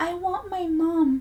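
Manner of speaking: put-on small, high, childlike baby voice. Recounting a police interview, the speaker quotes Robert's answer to detectives in a baby voice. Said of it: "in a baby voice".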